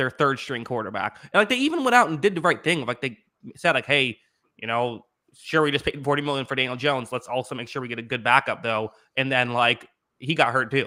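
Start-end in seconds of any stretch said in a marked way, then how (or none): none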